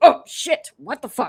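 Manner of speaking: dragon character voice. Narrating a mastodon running into a dragon's leg: voicing the dragon. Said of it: "And this dragon goes".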